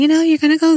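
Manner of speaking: sweet, very high-pitched voice. Retelling what a doula said at a prenatal appointment: imitating Arlen's sweet voice. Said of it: "she has a very sweet voice".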